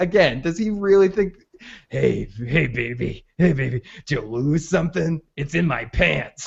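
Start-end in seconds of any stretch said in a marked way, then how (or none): 1.9-6.5 put-on sleazy, lecherous voice. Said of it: "could you be more textbook pervy than this guy".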